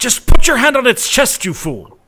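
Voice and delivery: very loud, very high-pitched shout. Voicing a good friend who calls out an order: shouting. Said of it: "your good friend's voice shout".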